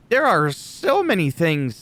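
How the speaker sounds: voice breaking on the words. Talking about what he dislikes about the WWE, voice cracking. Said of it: "my voice cracked".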